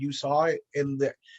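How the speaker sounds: plain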